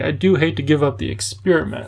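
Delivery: plain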